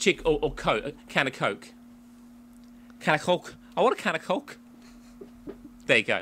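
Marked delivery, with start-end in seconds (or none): 0.9-4.6 clumsy, unconvincing Scouse accent, pitched up. Naming phrases that are easy to say in Scouse, in a poor Scouse accent. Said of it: "That's my Scouse accent".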